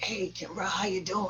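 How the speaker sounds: gruff, rough, growly rock-star voice. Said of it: "gruffly, growly voice that he has".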